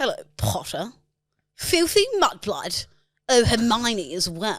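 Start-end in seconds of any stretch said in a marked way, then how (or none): 0.0-2.9 swooping sing-song jeering voice, wide pitch swings. Asked for a Draco Malfoy impression, doing it: Draco Malfoy impression. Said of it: "Give us your best Draco Malfoy impression".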